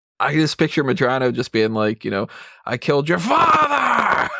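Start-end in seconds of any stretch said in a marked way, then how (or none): 2.7-4.3 very high, slow, drawn-out scream. Imagining Al Pacino playing General Medrano: Al Pacino screaming. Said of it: "he screams everything".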